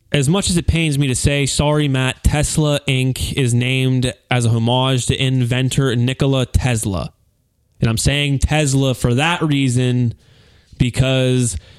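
ordinary delivery

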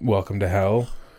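plain

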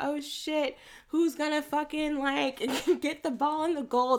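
broadcast-booth sports commentator play-by-play voice. Retelling the film's opening with the commentators talking: imitating a sports commentator. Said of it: "That's my sports commentator talk".

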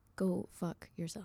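flat, with nothing behind it. Trying to tell the other speaker to get lost, unconvincing: flat, half-hearted insult. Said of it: "There was nothing behind that".

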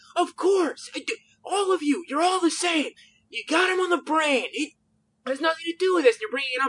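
mock, very high, loud, all-out screaming rant. Retelling how a man screamed at them in their own home: screaming. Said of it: "just screaming, literally, like, full on in my own home".

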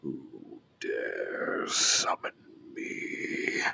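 low, whispered, growling voice. A summoned presence enters the room and speaks: low growl of a presence. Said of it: "this low growl of a presence".

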